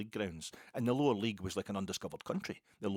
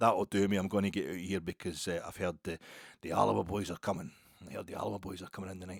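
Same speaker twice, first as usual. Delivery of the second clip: put-on rasping, gravelly older-lady barroom voice; 3 dB louder than usual. Speaker recounts an older lady at the bar talking to somebody; imitating a gravelly voice. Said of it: "she just said in a kind of gravelly voice".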